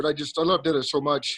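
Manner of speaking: voice getting choked up with emotion. Thanking older teachers who were met for the first time: getting choked up. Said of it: "I'm gonna get a little choked up here".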